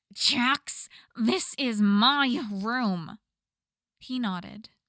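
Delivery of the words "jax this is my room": very slow, loud growl drawn through the words. A narrator reads a woman's line to Jax, who let himself in; growling. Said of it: "She growled through her words".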